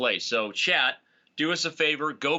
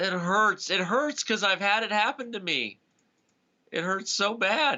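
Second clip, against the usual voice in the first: breaking, cracking voice, pitched up; 7 semitones higher than usual. Reacting to a painful chess blunder that happened to you too: voice cracking. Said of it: "My voice is cracking".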